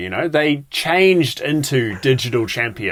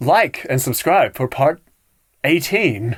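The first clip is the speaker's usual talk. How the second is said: robotic, computer-read text-to-speech voice. Joking about posting the podcast in one-minute clips: TikTok robot voice. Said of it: "With that TikTok robot voice at the end going like".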